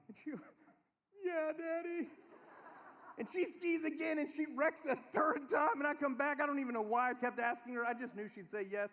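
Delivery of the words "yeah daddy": put-on tearful, weepy, high crying child's voice. A father retells his daughter answering him after a ski wreck, imitating Kaylee crying. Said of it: "And she's crying".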